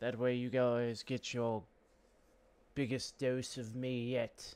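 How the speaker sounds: slipping into a put-on English accent. Wrapping up a gameplay session, telling viewers what comes next, in an english accent. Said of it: "I don't know why I had to say that in an English accent".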